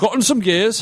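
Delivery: very high, put-on Cockney accent. Player answering in character about their hand, in a cockney accent. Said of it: "Nah, see, I did it anyway".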